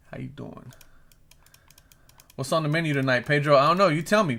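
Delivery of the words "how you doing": hushed, soft, breathy character voice. Reading a chat comment aloud: Joey from Friends voice. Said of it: "like, in a real Jimmy, uh, fucking, what's that guy's name from Friends? Joey".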